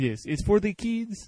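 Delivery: put-on slow, high French Canadian accent. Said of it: "he's from Montreal".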